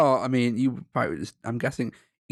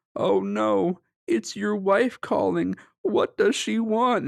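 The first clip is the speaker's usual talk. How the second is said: high, put-on terrified voice; 9 semitones higher than usual. Recalling the dad's ringtone of a random guy, imitating a terrified voice. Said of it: "It's like a terrorized voice".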